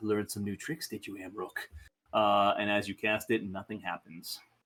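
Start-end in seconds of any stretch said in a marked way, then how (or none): 0.0-1.7 low, hushed, quiet half-whisper. Voicing a character who turns to a caster mid-spell: half-whisper. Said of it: "she's gonna whisper".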